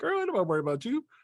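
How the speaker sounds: put-on jeering laughter. Retelling how the others reacted to her: imitating others laughing at someone. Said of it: "this is them laughing at her. Like".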